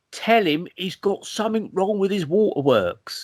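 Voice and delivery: put-on Cockney accent, taxi-driver style. Speaker recounts a voice heard while drifting off to sleep, Cockney EastEnders voice. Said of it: "this Cockney EastEnders voice".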